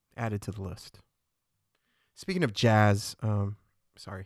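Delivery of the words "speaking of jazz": abrupt, sudden loud burst out of nowhere. Changing the topic to another speaker, suddenly loud. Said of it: "I don't know why I got so loud all of a sudden".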